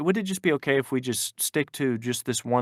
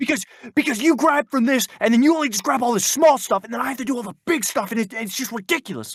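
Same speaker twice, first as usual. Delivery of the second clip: very high, loud, furious screaming; 10 semitones higher, 5 dB louder than usual. Retelling what she said while screaming at the speaker, retelling her screaming. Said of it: "she's screaming at me".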